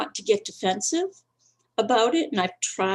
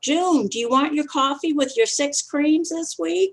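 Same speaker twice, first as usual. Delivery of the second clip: high, light voice calling out; 6 semitones higher than usual. Retelling how the worker behind the counter calls out an order: imitating someone yelling. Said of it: "the woman behind the counter will yell".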